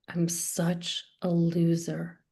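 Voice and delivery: ashamed, shame-filled voice. Leading an acting exercise, saying self-talk while curled inward: ashamed self-talk. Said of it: "your body drives the shame right into the text".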